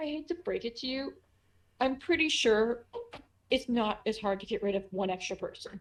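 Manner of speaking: as worried-sounding as possible, deeply concerned voice. Speaking in character during a role-play scene; very concerned voice. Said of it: "in the most concerned voice he can".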